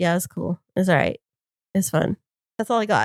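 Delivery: mock unenthusiastic, unimpressed, low-key tone. Retelling how a man reacted to his girlfriend's gifts: imitating an unimpressed reply. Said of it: "he was just like".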